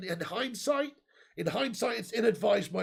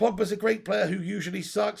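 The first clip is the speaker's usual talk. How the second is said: normal talking voice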